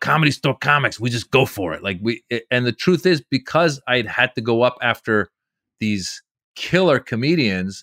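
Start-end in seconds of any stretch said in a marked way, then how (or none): 0.0-1.8 rough, gravelly comic voice. Retelling what another comedian said to him: gruff Joey Diaz voice. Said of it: "he's very gruff like that".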